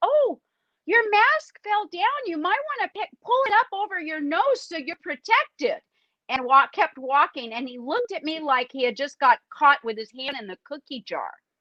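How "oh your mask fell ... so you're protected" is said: put-on sweetest, higher-pitched little old lady voice. A healthcare worker retells telling a man his mask fell down, in a put-on sweet little-old-lady tone. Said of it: "in my sweetest little old lady tone".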